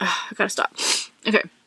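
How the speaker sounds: tearful voice, talking through crying. While talking about ice cream, the speaker breaks off, crying. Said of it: "I'm so sorry I'm crying".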